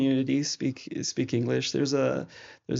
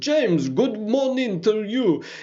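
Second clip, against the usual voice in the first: put-on old Albanian man voice, higher and louder; 8 semitones higher, 4 dB louder than usual. Retelling how an old Albanian man greets him: imitating Zulfo. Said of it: "an old Albanian man in his fedora hat who comes and says".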